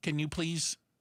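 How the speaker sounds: imitated little computerized, robotic voice. Retelling how a delivery robot asked for help: imitating a little computerized voice. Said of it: "It was like a little computerized voice".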